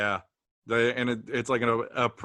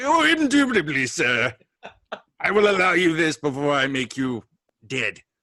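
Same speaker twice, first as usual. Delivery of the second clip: put-on loud, swooping, old-fashioned English accent, snake-like; 4 semitones higher, 5 dB louder than usual. Speaker voicing a snake in a joke bit, old-timey English accent. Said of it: "the snake has this old timey English accent".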